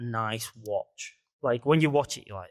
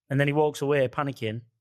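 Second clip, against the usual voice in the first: usual speaking voice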